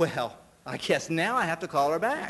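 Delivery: normal talking voice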